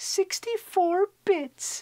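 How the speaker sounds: thin, piping, very high-pitched silly voice. Recalling kids at school debating the next game system, counting bits in a high-pitched voice. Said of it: "(high pitched voice)".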